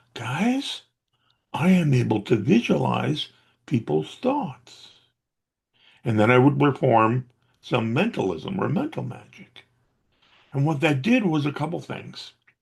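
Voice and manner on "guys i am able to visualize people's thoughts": slow, loud, conspiratorial stage whisper. Retelling leaning in to his audience as if sharing a secret, loud whisper. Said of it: "I whisper in a loud voice".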